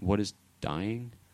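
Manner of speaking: guileless, wide-eyed, innocent tone. Retelling what a toddler asked after hearing about death: imitating a toddler's innocent question. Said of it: "in the most innocent way you could possibly".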